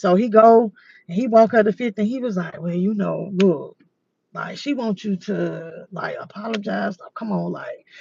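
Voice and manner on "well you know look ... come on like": muttered under the breath, lower and quieter. Retelling how a friend passed on a request: imitating someone saying it under his breath. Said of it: "he trying to say it on his breath".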